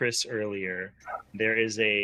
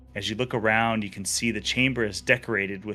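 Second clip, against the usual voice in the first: ordinary talk, nothing marked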